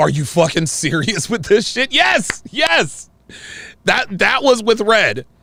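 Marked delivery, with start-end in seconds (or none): 0.0-1.9 fed-up, exasperated, incredulous tone. Retelling an argument with Red: imitating Myron's frustrated disbelief. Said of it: "showed any sign of frustration or disbelief".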